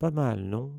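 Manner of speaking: honeyed, smooth, silky, sugary voice. A boy speaks to onlookers admiring his team's new brooms, silky, sugary voice. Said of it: "dit Malfoy d'une voix doucereuse".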